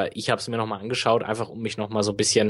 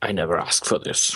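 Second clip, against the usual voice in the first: low, attempted put-on smoky voice; 4 semitones lower than usual. A podcast host quotes a line, in a smoky voice. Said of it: "ich krieg die rauchige Stimme nicht so hin".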